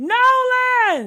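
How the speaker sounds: panicked, very high, drawn-out yell. Retelling a yell heard on a call: imitating someone yelling. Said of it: "somebody yell".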